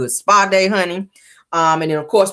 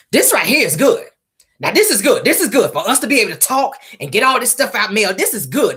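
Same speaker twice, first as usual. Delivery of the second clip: mock fervent, insistent yelling in a woman's voice; 4 semitones higher than usual. Retelling what Stormy said once she started yelling, retelling Stormy yelling. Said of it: "she starts yelling".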